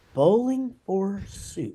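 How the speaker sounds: very slow, stretched-out. Retelling how people always say the band's name, saying it really slow. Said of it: "they always say it really slow".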